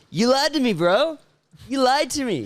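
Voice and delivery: put-on Californian accent, very high pitch. Retelling the man who checked his passport for a beer, in a californian accent. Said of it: "had like one of those Californian accents".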